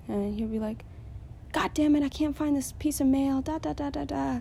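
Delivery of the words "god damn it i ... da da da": acted, exasperated, frustrated shouting. Imitating a man who yells when he can't find things, retelling his yell. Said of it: "he'll start yelling".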